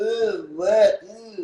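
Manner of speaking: pretentious, showy, affected ooh. Mocking people who put on airs: imitating affected airs. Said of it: "put on these airs".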